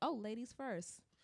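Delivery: ordinary delivery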